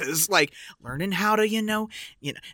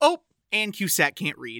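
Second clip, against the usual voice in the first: ordinary talk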